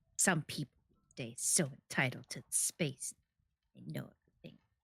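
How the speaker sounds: quiet, irritated, angry grumbling mutter. Voicing the woman grumbling after the player moves aside: grumbling woman's voice. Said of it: "she continues grumbling".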